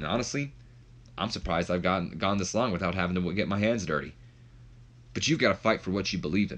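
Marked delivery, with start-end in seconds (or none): none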